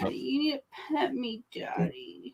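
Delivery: effeminate talking pet cat voice. Speaking for the cat to its owner, voicing the cat. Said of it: "That's the animal voice for her".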